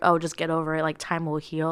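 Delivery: ordinary delivery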